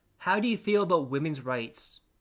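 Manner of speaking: ordinary delivery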